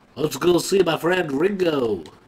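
put-on Liverpool accent. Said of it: "I just decided to start doing a Beatles fucking accent".

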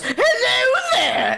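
high-pitched, drawn-out cry. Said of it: "the bearded guy falls from the ceiling and he goes".

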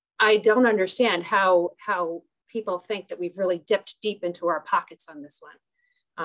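ordinary talk

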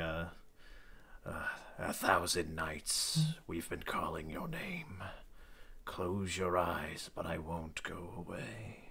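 slow, gloomy, morose mumbled mutter. Retelling his reply when asked if he got anything, muttering. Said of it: "just muttering".

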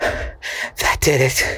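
breathless, winded words. Narrator reading a woman's line after she pulls a picture down, breathless. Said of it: "said Miss Dolby breathlessly".

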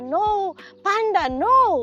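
high, loud shouting. Retelling how an owner yelled at their excited dog, retelling a shout at a dog. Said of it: "Sumisigaw siya".

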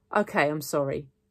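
ordinary delivery

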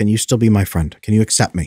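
ordinary delivery

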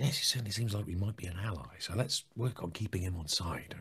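quiet, soft-voiced.

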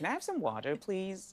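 put-on American accent. The speaker recalls their old way of asking for water, in a put-on American accent. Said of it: "my American self".

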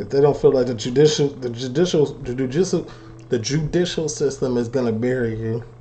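stuttering, repeating the word judicial.

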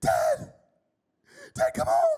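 put-on very high, drawn-out, terrified child's scream. Retelling a phone call from a daughter: imitating a child screaming in panic. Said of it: "she is screaming like bloody murder".

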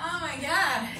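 ordinary delivery

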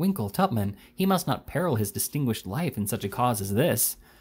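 ordinary delivery

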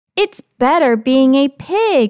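plain reading voice

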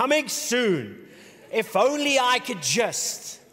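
big, slow movie trailer announcer voice. Describing a dashboard's speaker and imitating its Paramount movie trailer voice. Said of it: "a major Paramount movie trailer voice".

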